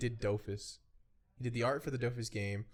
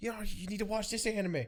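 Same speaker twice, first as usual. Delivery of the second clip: mock very high, shrill, insistent yell; 10 semitones higher than usual. Retelling people pushing them to watch an anime: imitating someone yelling. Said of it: "yelling at me".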